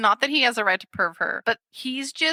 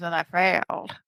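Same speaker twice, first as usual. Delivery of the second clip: put-on slurred, weird tough-guy voice, lower; 5 semitones lower than usual. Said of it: "speaking in this, like, slurry, weird".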